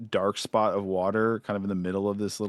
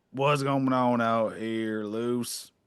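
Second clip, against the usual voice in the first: put-on slow, gruff, grizzled, salty old barman voice. Voicing an old Seaborn man coming out polishing a glass: gruff old Seaborn man voice. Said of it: "real gruff".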